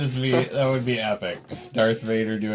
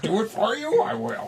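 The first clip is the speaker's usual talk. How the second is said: botched, odd little voice pitched very high; 13 semitones higher than usual. Speaker redoes a line after admitting the first try was terrible: bad Yoda voice. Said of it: "I didn't even do it backwards".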